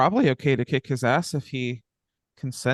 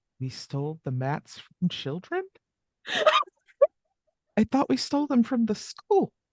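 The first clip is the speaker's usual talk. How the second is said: half stage whisper, pitched a bit higher; 9 semitones higher than usual. Voicing a character who half-whispers to a companion: half-whispering in character. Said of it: "Calliope is just gonna whisper to Janice".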